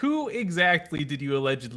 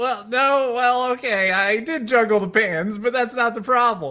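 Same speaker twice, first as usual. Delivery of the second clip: loud, raised, high-pitched defensive tone; 9 semitones higher, 7 dB louder than usual. Asked how he could be framed, the speaker answers in a defensive Disaster voice. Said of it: "Disaster's hands fly up defensively".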